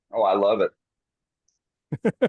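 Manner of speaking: heavy, dripping sarcasm, very slow and drawn out. Replying to a remark about liking to watch sanding: dripping sarcasm. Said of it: "Sarcasm is dripping".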